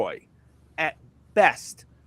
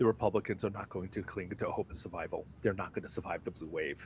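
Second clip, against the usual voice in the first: very low, soft, hushed dramatic narrator voice; 8 semitones lower, 12 dB quieter than usual. Speaker announces a switch, then speaks in a narrator's voice. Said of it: "narrator's voice".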